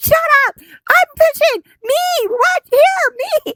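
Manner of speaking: very high-pitched, loud shrieking yell. Retelling shouting at a video on the TV: retelling screaming at the TV. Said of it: "I'm screaming at the T V".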